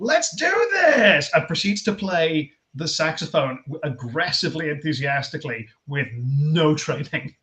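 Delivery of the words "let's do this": very high, loud, all-out hype scream. Retelling a comedian bursting out with a saxophone: imitating a scream. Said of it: "just screams".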